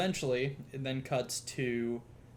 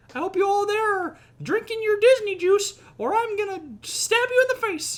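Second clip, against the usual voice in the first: squeaked out high and loud; 10 dB louder than usual. In a comedy bit, speak as Mickey Mouse in a Mickey Mouse voice. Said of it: "It's me, Mickey Mouse".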